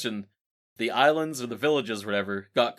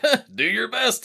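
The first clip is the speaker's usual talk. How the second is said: very high, slow, drawn-out mocking, teasing jeer; 12 semitones higher, 5 dB louder than usual. Imitating a grandpa watching someone drop a wrench: imitating a mocking grandpa. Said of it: "making fun of him".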